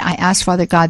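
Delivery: ordinary delivery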